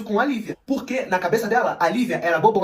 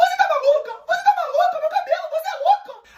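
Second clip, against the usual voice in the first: put-on squawking parrot shrieks, very high and shrill. Retelling a story, the speaker acts out a girl who went crazy: imitating Thalita screaming like a parrot. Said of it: "Começou a gritar muito, igual um papagaio".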